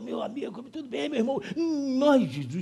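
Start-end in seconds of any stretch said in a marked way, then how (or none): 0.0-1.4 very hushed, soft, raspy, hoarse, humble voice. Describing a humble-looking man who would win, then imitating him: hoarse voice. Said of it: "E se tiver a voz rouca?".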